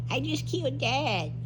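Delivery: put-on very high, slow, sweet little-kid voice. Retelling an eleven-year-old's nine-one-one call: sweet child voice. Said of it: "you talking in your sweet child voice".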